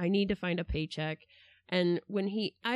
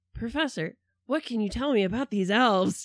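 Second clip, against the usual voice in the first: loud, barging-in, straight-out delivery; 3 semitones higher, 5 dB louder than usual. Retelling a movie scene, imitating the movie grifter's line. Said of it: "he says it exactly the way I'm gonna say it now".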